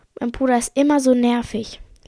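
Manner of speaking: ordinary talk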